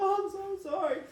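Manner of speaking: very high-pitched, tearful, crying. Retelling what was said after a near-death experience, imitating own past sobbing. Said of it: "I'm crying".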